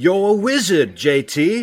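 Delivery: very slow, deliberate, dragged-out, clumsy delivery. Doing a best Harry Potter impression for friends: Harry Potter impression. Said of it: "That was my best Harry Potter".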